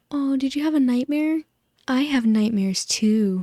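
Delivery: goofy, high-pitched delivery. Retelling a movie scene to mock it: goofy Katniss impression. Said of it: "she looks at it and she goes".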